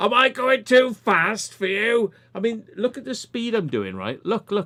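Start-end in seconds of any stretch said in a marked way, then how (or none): 0.0-2.1 very high, drawn-out yelled shout. Speaker retelling what they shouted at a woman reacting to their speed, retelling a shout. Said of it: "I just shouted".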